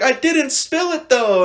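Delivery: put-on crying child voice, high and loud. Retelling a small child's denial during a prank: imitating a crying child. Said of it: "The kid's just crying".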